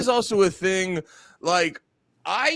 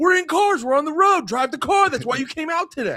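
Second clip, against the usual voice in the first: acted-out high, hollered yelling; 9 semitones higher than usual. Retelling what gets yelled at timid drivers: imitating yelling at drivers. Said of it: "when people are being timid about stuff, I go".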